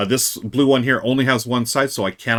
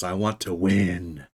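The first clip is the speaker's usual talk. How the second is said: menacing, dark, sinister, low and slow; 4 semitones lower, 5 dB quieter than usual. Answering why they would make a move in the game: sinister tone. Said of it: "That sounded sinister".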